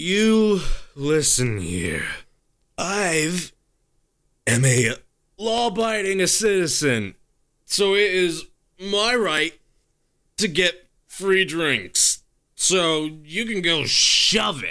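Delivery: put-on loud, slow, sloshed drunken voice. Voicing a drunk patron who shoves the barkeep: drunk character voice. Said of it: "He's drunk".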